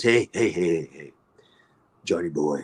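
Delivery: put-on gruff voice. Retelling how a scene partner greets him, imitating a gruff voice. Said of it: "he's got this very gruff voice".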